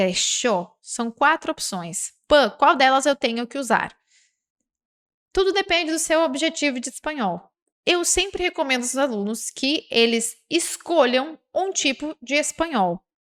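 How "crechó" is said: Rioplatense crechó, Y pronounced as SH. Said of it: "e com o S H".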